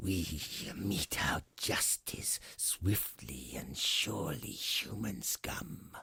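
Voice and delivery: whispered, breathy, hissing dragon voice. A dragon looming above a human hisses at him. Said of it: "the dragon hissed".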